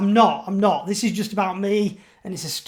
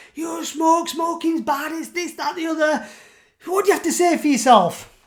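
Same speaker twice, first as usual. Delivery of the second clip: put-on mum voice, high, screaming, scolding rant; 8 semitones higher than usual. Retelling how mum scolded about smoking: imitating mum screaming. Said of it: "screaming at me".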